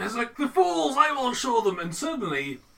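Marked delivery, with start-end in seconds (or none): 0.4-1.8 very loud, theatrical, booming, pitched-up mad-scientist voice. Describing a moment of starting to speak dramatically, dramatic mad-scientist voice. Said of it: "you start speaking in a mad science voice. Oh, kind of dramatic".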